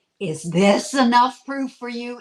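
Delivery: loud booming voice. Retelling a channeling session, the voice answers a demand for proof, booming voice of Ra. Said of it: "this booming voice came through and said".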